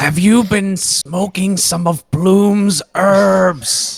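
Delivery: high stage whisper, "herbs" drawn out. Voicing a character leaning in to tease a friend: loud whisper. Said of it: "he loudly whispers".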